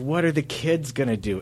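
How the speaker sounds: weepy, tearful, sobbing voice. Retelling an open mic comic breaking down on stage: imitating someone crying. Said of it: "he starts crying and goes".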